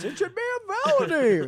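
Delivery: very high, loud, swooping voice. Speaker, talking about an egged house, suddenly slips into a Don Knotts voice. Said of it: "all of a sudden I'm Don Knotts".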